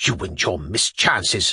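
whispering, menacing, threatening tone. Madame answers the narrator, who says he only explained the game: threatening whisper. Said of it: "she whispered threateningly".

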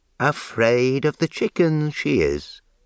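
teasing, scornful voice. A man talks about his cat, mockingly. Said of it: "he said mockingly".

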